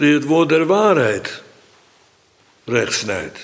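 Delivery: heavy stress placed on waarheid. Practising sentence stress in a repeated phrase: stress on waarheid. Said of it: "En nu krijg ik betrekkelijk automatisch de klemtoon beter".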